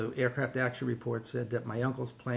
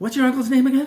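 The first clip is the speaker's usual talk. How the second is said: put-on very high, very loud, breathless acted kid blurt; 13 semitones higher, 14 dB louder than usual. Retelling a kid who ran into their office before break, imitating a kid out of breath. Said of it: "He's out of breath and he goes".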